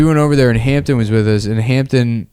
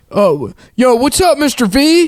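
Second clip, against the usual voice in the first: higher, mocking slang-talking voice; 12 semitones higher than usual.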